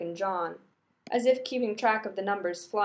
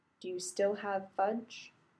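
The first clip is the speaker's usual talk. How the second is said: lowered, hushed, very quiet voice; 6 dB quieter than usual. Rodney bends over the counter to ask, voice lowered. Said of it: "Rodney lowers his voice to library levels".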